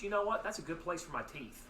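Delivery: plain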